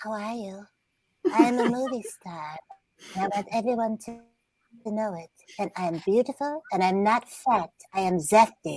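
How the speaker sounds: high-pitched dog voice. Showing the group the voice of a dog named Mila: voicing a dog named Mila. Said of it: "her voice is this".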